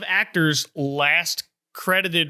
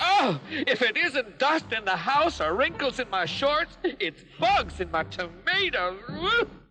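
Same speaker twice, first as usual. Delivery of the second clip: exaggerated, fussy put-on voice; 8 semitones higher, 4 dB quieter than usual. Introducing a show's neat-freak character, doing Finicky's exaggerated fussy voice. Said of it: "he's got this exaggerated fussy voice".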